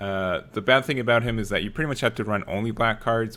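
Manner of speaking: ordinary talk, nothing marked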